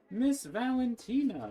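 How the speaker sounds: big, booming, loud, very high-pitched call. Narrator voicing a character calling Miss Valentina from behind, big booming voice. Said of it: "a big, loud voice comes from behind you".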